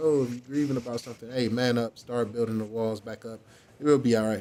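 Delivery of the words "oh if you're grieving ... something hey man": plain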